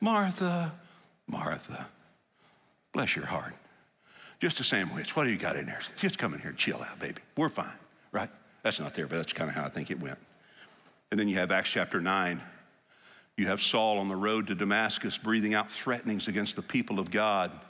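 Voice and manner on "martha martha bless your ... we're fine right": mock calming voice, lower. Retelling a scripture scene, voicing Jesus calming Martha: imitating Jesus soothing Martha. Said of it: "You don't get inflection when you read it, but I think he kinda said".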